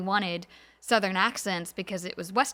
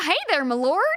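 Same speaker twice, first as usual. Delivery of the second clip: full-on put-on Southern accent, raised and high; 8 semitones higher, 6 dB louder than usual. Recounting showing others how it would sound, full Southern accent. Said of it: "maybe like a slight Southern accent".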